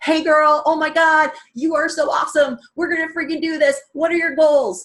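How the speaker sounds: loud, high, hyped-up, all-in pumped tone. Showing how a video invite sounds: imitating her own pumped-up invite. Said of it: "I'm pumped up".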